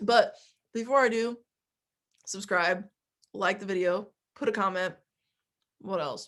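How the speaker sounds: speaking with mouth full, chewing. Opening a video for viewers while eating, talking with mouth full. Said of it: "as I eat this date thing with my mouth full".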